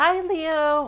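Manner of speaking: high voice, cracking and breaking on the words. Opening a monthly tarot reading by greeting Leo, voice cracking. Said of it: "My voice is cracking".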